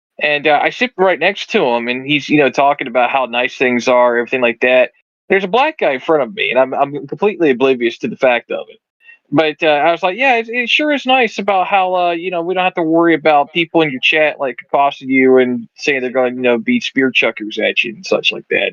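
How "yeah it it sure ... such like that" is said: ordinary delivery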